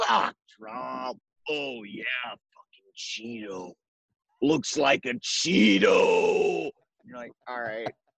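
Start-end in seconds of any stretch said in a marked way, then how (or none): 0.0-6.7 put-on drunk voice. Acting out how the speaker's dad talks when he gets drunk, imitating a drunk dad. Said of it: "When he gets drunk".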